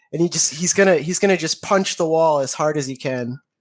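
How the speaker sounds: ordinary delivery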